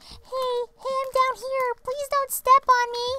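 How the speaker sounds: very high, tiny little talking-flower voice. Told they sound like a flower, the speaker imagines a flower talking, little flower voice. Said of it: "do flowers have a little voice like that?".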